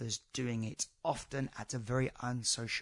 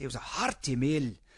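clumsy, very bad, put-on Scottish accent; 4 dB louder than usual. Quoting their last podcast guest, Alistair Wilson, the host does a bad Scottish accent. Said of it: "That was my very, very bad Scottish accent there".

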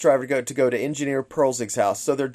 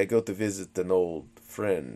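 put-on, really creepy, low, hushed voice; 6 semitones lower, 8 dB quieter than usual. Recapping a film, acting out a character's line in a put-on creepy way. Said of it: "he says it really creepy".

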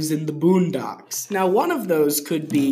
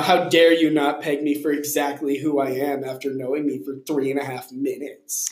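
normal talking voice

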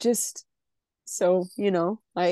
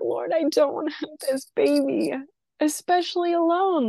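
re-enacted crying, higher pitch; 8 semitones higher than usual. Recalling a time of deep emotional pain, she is retelling her past crying. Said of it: "just crying".

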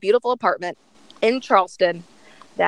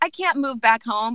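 ordinary delivery

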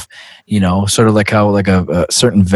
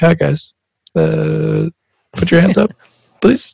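put-on nervous, scared voice, higher; 9 semitones higher than usual. Retelling talking on the mic in the club: imitating own scared mic voice. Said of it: "I'm so scared to talk on the mic".

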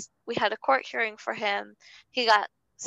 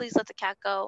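put-on crying, tearful pleading voice; 3 dB quieter than usual. Speaker recounts pleading with a man during a past incident: retelling crying and begging. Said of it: "I'm crying and begging to him".

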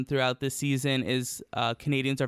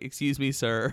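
put-on, flirty, flamboyant, showy voice. Retelling Priyanka hitting on the sound engineer: imitating Priyanka flirting. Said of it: "she's like".

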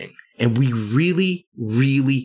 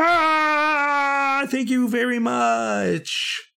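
huge exuberant enthusiastic tone, higher pitch; 13 semitones higher than usual. Describing what supporters will hear read on the podcast: huge enthusiastic thank you. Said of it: "accompanied by a huge "Thank you!".

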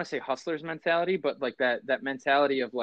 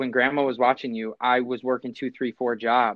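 ordinary talk, nothing marked

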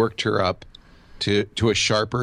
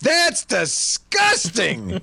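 put-on very high, swooping, top-of-the-lungs loud outcry; 13 semitones higher than usual. Retelling what she said after tasting the cheese in a restaurant: retelling her shouting. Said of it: "really at the top of her voice".

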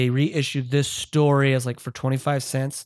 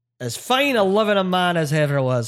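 light, put-on Irish accent, pitched up; 5 semitones higher than usual. Describing characters who introduce a corpse, in a little irish accent. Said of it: "I'm going to do a little Irish accent for you".

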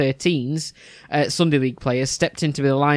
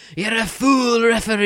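mock bellowed shout in a Scottish accent; 8 semitones higher, 3 dB louder than usual. Recalling a man who shouted his thoughts at referees, retelling a Scottish shout. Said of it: "in his Scottish accent as well. He used to shout".

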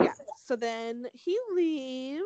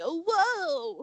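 high, slow, gasping mock surprise. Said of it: "it was just like".

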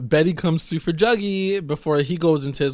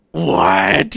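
put-on outraged, loud, furious, angry tone; 6 dB louder than usual. Retelling a character's reaction to news, imitating an angry reaction. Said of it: "he was so pissed".

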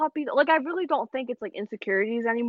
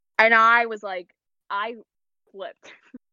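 ordinary talk

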